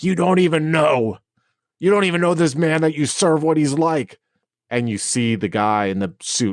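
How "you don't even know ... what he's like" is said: high-pitched, furious screaming. Narrating a scene where a voice from you answers the figures, screaming at them. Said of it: "she just is screaming at them like".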